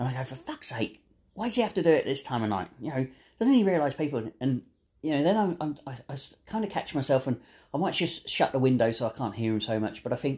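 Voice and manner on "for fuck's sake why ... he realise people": acted, exasperated, annoyed, fed-up rant. Retelling own reaction to a neighbour's late-night power tools: annoyed outburst. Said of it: "I really want to emphasise the, the emotion that's behind this".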